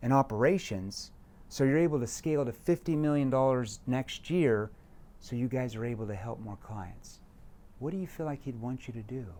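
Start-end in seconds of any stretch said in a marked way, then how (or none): 7.8-9.2 worried, concerned, caring tone. Demonstrating how to end a question to a client: concerned tone. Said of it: "See how I end it in a concerned tone".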